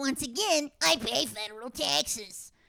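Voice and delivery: angry, slow, high, drawn out, each word bitten off. Retelling an argument with a postmaster, angry yelling. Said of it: "stop yelling at me".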